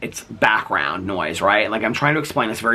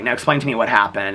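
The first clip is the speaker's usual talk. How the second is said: normal talking voice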